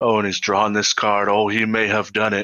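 put-on hushed commentator whisper. Comparing the broadcast to golf, imitating Tim Willoughby whispering. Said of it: "whispering in the, into the mics".

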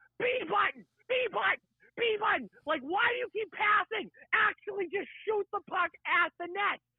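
full-throated, shrill, repeated screaming. Retelling yelling at the tv during a hockey game: imitating own screaming at tv. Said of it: "I was screaming at the T V".

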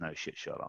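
muttered under breath. Retelling own reply to a visitor's remark: retelling a muttered aside. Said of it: "I said under my breath".

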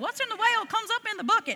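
put-on Southern accent. Speaker quotes an old pastor's saying, imitating a Southern accent. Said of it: "He's real Southern".

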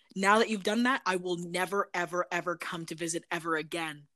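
play-acted utterly earnest, solemn, grave, dead serious. Retelling a sarcastic threat made to a young cousin over Monopoly: really serious tone. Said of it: "really serious".

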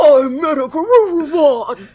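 wild creature voice, loud. Speaker imitating evolving Digimon, doing their crazy Digimon creature voice. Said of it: "they have these crazy voices".

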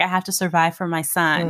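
plain

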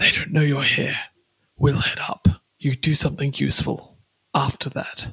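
speaking in a hushed whisper. Huddling with two companions, a player's character shares the plan, whispering. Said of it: "huddle and whisper".

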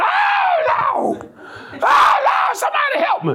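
very high, long, stretched-out hollering. Retelling how the remarried man cried out while whipped: imitating a man hollering. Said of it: "he was hollering".

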